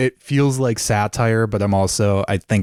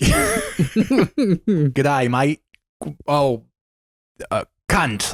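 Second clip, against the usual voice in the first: put-on Australian accent, much higher pitch; 5 semitones higher than usual. Asked to do their best Australian accent right now, Australian accent. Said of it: "Do your best Australian accent right now".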